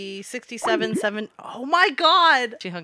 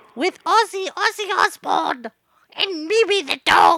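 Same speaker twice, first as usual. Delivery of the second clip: put-on English accent, pitched up; 8 semitones higher, 4 dB louder than usual. Prank calling a stranger, posing as Sharon Osbourne: Sharon Osbourne impression. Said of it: "It's Sharon Osbourne".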